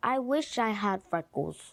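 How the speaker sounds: ordinary talk, nothing marked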